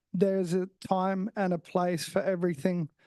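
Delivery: ordinary talk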